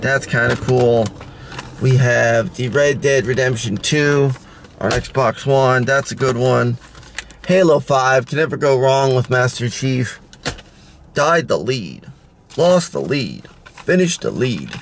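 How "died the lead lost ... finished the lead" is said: horrible bad announcer voice, swooping pitch. Listing video games, doing a horrible Halo 2 impression. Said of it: "that's like a horrible impersonation".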